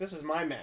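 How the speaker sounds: ordinary talk, nothing marked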